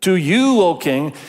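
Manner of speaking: sarcasm laid on thick. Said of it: "can you hear the sarcasm?".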